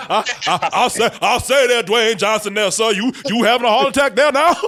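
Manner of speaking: put-on cartoon character voice. Mocking a movie scene line: Foghorn Leghorn voice. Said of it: "Foghorn Leghorn".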